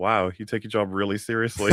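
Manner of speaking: plain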